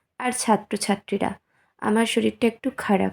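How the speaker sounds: speaking softly. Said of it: "আমি আস্তে আস্তে বলছি".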